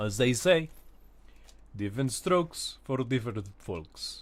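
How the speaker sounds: put-on attempted Russian accent. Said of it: "Why am I trying to talk like Russian?".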